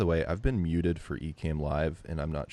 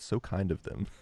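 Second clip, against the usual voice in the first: put-on snarky, sarcastic tone; 3 semitones higher than usual. Retelling another person's reply to hearing the staff were kind: mock-sarcastic. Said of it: "sarcastic voice".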